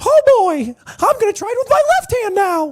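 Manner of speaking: high, loud cartoon-mouse voice. The speaker tries this voice for the first time, Mickey impression. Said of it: "I'm trying to try a Mickey right now".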